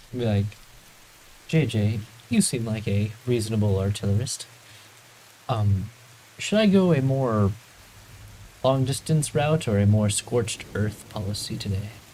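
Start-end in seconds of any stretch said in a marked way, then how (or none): 1.5-11.9 discreet, private sidelong aside. Asking a fellow party member a question in character: speaking very quietly. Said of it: "I'm saying it very quietly".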